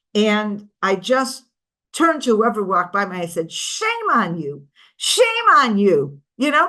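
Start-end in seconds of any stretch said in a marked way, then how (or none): 3.5-6.2 bitter, slow, swooping angry scolding. Retelling turning to whoever walked by, retelling an angry rebuke. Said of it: "I was actually by that point really angry".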